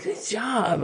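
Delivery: hushed, heavily sarcastic approval, laid on thick. Describing a thumbs-up they give: acting out sarcastic praise. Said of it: "in like a very sarcastic way".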